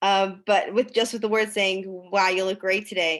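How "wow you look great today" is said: mocking, sarcastic tone. Showing how a compliment sounds when said sarcastically: sarcastic tone. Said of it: "being said in a sarcastic way".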